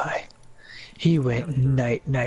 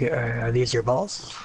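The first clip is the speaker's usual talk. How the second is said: ordinary talk, nothing marked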